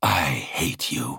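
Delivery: low hateful hiss with shrieking edge. The ship's hateful presence lashes out at the woman probing it, hissing. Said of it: "the Covenant hissed".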